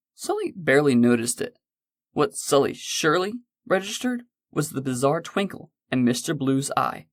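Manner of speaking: ordinary talk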